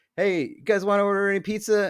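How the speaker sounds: mock very high, carrying yell. Retelling how a friend's dad called down the stairs: imitating someone yelling. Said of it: "he yelled down the stairs".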